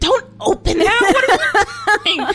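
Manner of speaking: shrill, high, loud, drawn-out panicked yell. Recounting yelling when he starts to open it, retelling a yell. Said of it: "I think I literally like yelled".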